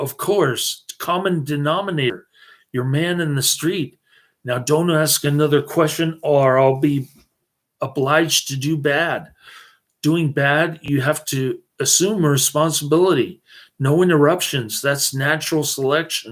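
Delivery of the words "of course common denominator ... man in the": plain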